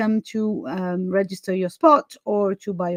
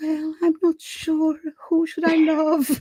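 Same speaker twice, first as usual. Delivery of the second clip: small, shrunken, tiny, high little voice; 7 semitones higher than usual. Imitating a character from a classic period novel, in a tiny voice. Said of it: "kind of with this tiny voice".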